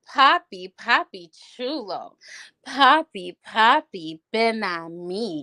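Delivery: real seductive, slow, sultry, sexual delivery. Speaker retelling what they called out to a man in a restaurant: retelling a seductive come-on. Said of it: "I said it in a real sexual, seductive way".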